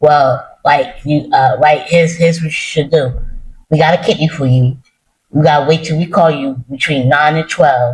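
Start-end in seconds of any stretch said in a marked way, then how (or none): none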